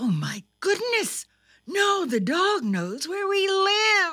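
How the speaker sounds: rising, alarmed crying out. Narrator reads Thumper's mother as the dog howls outside, crying out. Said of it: "cried Thumper's mother".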